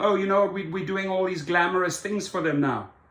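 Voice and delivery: plain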